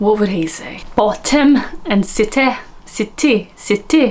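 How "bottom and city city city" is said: very slow, careful attempt at Welsh accent. Speaker tries the words as a welsh former boss would say them, attempted welsh accent. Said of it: "I have offended the Welsh people".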